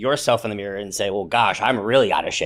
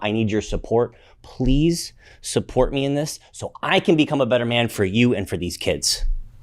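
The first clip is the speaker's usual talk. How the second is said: heartfelt, earnest, pleading tone. Showing how to ask one's wife for support: heartfelt plea. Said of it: "have a really heartfelt conversation".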